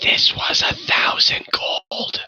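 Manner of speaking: quiet, whispered aside. A character glares at Gravel and, unheard by the other two, whispers toward the player. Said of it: "he kind of whispers off in your direction".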